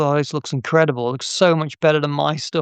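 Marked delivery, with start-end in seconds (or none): none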